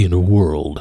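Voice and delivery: movie trailer voiceover voice. Naming the improv game, then saying its title again: Don LaFontaine trailer voice. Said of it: "Name that voice actor".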